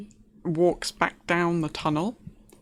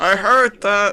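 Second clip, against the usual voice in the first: loud, resonant booming voice, louder; 3 semitones higher, 11 dB louder than usual. Answering a whispered remark overheard by the other players: booming voice. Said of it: "That's his booming voice".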